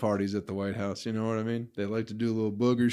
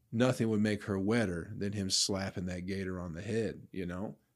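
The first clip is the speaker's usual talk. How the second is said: ordinary talk, nothing marked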